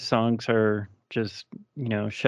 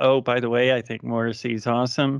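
usual speaking voice

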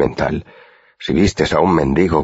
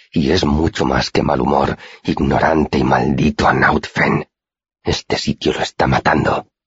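muttering through clenched teeth. A character retorts to the Chronicler, muttered through gritted teeth. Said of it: "masculló entre dientes".

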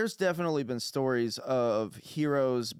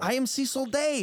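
angry outburst, losing control, higher pitch; 12 semitones higher than usual. In a role-play scene, a character confronting the others, angry outburst. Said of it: "you really need to control yourself".

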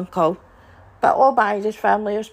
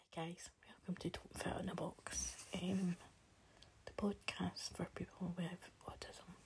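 quiet voice, lower and quieter; 5 semitones lower, 27 dB quieter than usual. Recording a podcast intro while trying to keep quiet: speaking quietly. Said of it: "I'm being quiet because".

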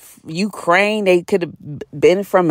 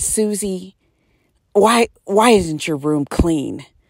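put-on passive-aggressive tone. Acting out a mother speaking to her little girl, mock passive-aggressive mother. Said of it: "They're very um, passive aggressive".

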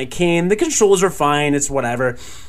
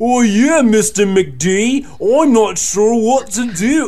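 very slow, failed, bad Brooklyn accent; 4 semitones higher, 3 dB louder than usual. Imitating a guy from Brooklyn whose voice the speaker hated, in a failed Brooklyn accent. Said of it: "Wow, I'm British now, so I can't do accents".

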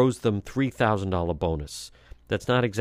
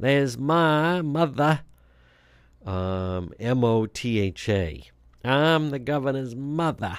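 put-on New England Irish accent, higher, slower; 4 semitones higher than usual. Showing how the governor's mother talks in a commercial, use a Ted Kennedy type accent. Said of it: "a Ted Kennedy type accent".

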